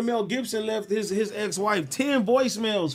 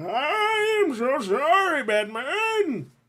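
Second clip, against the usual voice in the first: high put-on voice with a long drawn-out "I"; 5 semitones higher than usual. After a joke about recording yourself crying, apologize to Batman in a Bane voice. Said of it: "In my Bane voice".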